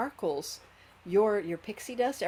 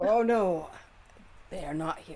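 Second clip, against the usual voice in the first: rasping, raspy, dragon-like woman's voice; 4 dB louder than usual. Narrator voicing a woman who was a dragon, turning to speak to you, raspy voice. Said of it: "her voice is still kind of raspy, like it was as a dragon".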